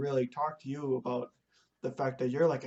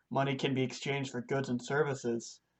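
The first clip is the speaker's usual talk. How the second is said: ordinary talk, nothing marked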